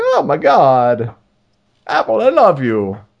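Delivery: slow, swooping cartoon-hero gush, God stretched out. Imitating excited fans of a new phone in a Mario voice. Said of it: "It's a Mario".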